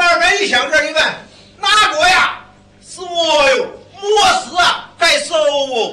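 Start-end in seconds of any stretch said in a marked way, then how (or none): 1.6-5.9 Hubei dialect in short, spare phrases. Showing your partner how few words this dialect needs, speak in Hubei dialect. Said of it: "湖北话说这点事儿".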